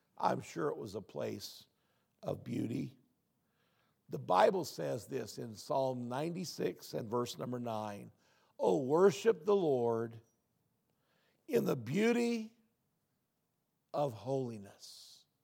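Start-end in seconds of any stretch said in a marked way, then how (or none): 8.6-15.1 very slow, drawn-out reading, word by word. Reading a verse from Psalm 96 aloud to listeners, reading very slowly. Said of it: "Why do you read it so slow?".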